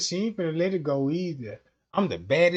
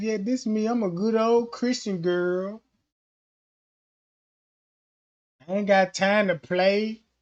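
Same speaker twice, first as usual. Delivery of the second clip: put-on acted, feigned good-girl innocent manner; 3 semitones higher than usual. Imitating how women talk when taking pictures: imitating an innocent act. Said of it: "Acting innocent shit".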